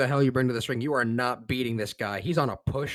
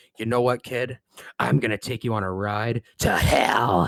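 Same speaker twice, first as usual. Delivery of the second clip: put-on menacing, threatening voice. Retelling a line said to a child in a wheelchair: imitating a menacing threat. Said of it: "menacingly, and he says".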